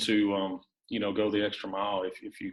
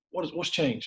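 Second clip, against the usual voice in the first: acted, harsh and mean, with pitched-up delivery; 8 semitones higher than usual. Retelling a question put to a player, imitating his own mean voice. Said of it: "kinda that mean voice".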